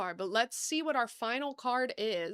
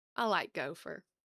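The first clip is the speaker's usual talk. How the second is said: strong, noticeably Southern accent; 6 semitones lower than usual. Opening trading cards, reacting to a Gopher card: noticeably Southern accent. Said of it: "That sounded really Southern".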